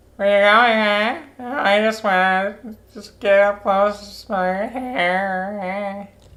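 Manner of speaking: slow, high nerdy voice. Making up silly lines for a character in a scene: put-on dweeb voice. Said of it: "Just make her sound like a fucking some dweeb".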